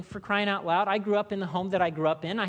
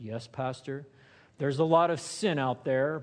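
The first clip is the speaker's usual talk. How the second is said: mock pious, put-on godly voice, much lower; 6 semitones lower than usual. Speaker imitating people agreeing with a pastor about sin, in a put-on godly voice. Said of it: "They'll put on the godly voice".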